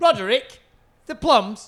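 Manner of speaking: loud, careless, offhand, dismissive shout. Retelling a name heard shouted in a shop: imitating a dismissive shout. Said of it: "the dismissive of, like, as if he'd forgotten".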